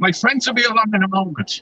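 put-on young girl's Irish accent. Retelling what a drunk passenger said on getting in: imitating an Irish accent. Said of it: "she had a, a, an Irish accent".

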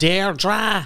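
north side Dublin accent. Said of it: "take any name and fire it up there".

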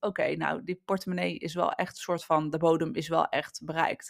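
ordinary talk

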